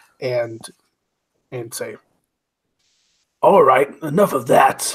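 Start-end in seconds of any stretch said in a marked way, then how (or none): 3.4-4.9 put-on fake low, deep voice. Describing popping up by the dj booth on the ice, in a fake deep voice. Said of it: "in sort of like a fake deep voice".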